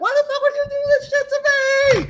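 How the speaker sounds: acted, shrill, very high, shrieking child's scream. Retelling an anime scene where a child is used as bait: imitating a child screaming. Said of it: "literally screaming".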